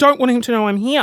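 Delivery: normal talking voice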